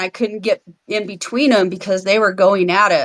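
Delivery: plain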